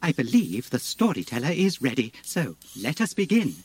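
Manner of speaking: acted robotic voice. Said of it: "I am C three P O".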